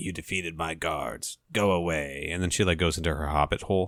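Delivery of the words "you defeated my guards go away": hoarse, raspy, put-on woman's voice. Retelling a scene where a hooded woman tells a warrior to leave: imitating a raspy-voiced woman. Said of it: "this raspy sounding woman in a hooded red robe".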